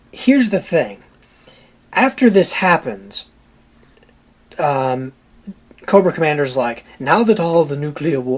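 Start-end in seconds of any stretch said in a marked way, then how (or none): 6.9-8.2 put-on British accent. Retelling Cobra Commander's line from the movie: Cobra Commander in British accent. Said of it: "he's not British".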